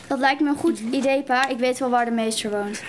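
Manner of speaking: ordinary talk, nothing marked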